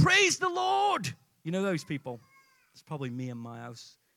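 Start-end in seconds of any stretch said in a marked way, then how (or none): 0.0-1.1 play-acted, very high, loud holler. Telling a joke, voicing an elderly lady on her front porch, retold shout. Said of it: "She would stand on a front porch and shout".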